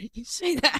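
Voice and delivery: muttered under the breath. Voicing a character muttering under their breath. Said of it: "mutters under their breath".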